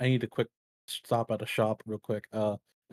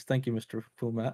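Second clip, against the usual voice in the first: uncharacteristically meek tone. Voicing an intimidated character thanking a shopkeeper: uncharacteristically meek thanks. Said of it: "In the most uncharacteristic way of Harbinger, he says".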